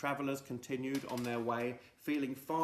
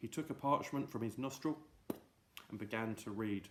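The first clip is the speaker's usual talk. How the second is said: ordinary delivery, nothing marked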